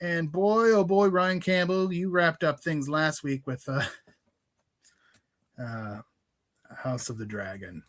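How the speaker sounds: disappointed, let-down tone. Speaker recapping what the other speaker wrapped up last week, in a disappointed tone. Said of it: "Why you sound so disappointed?".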